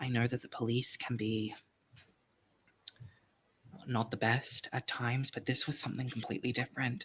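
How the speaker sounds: leaning-in, very soft half-whisper. Voicing a character leaning in to speak uncomfortably: very soft half-whisper. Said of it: "he'll kinda lean in and very softly say".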